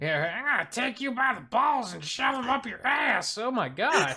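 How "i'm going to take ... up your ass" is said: very high, crude yelling. Imitating a game villain shouting a taunt: shouting Marguerite impression. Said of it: "shouts out".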